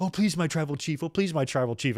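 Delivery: pitiful, groveling, begging tone. Describing a wrestling match as Heyman talks to Roman in the corner, Heyman impression, mock-pleading. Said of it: "when he's talking to Roman in the corner".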